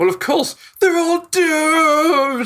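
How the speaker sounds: agitated, worked-up, very high, rising, doomed stretched out. Voicing a prophet who insists everyone is doomed: worked up. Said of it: "he starts getting all worked up again".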